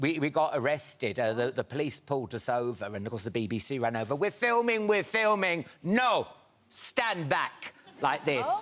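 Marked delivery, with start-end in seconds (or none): 4.2-8.4 fake Italian accent with raised pitch. Retelling what the BBC crew said when police pulled them over, put-on Italian accent. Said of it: "your Italian accent?".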